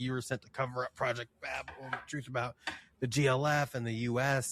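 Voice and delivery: put-on mocking, taunting villain voice. Retelling how a game villain taunts the hero: imitating a taunting villain. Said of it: "taunting him about".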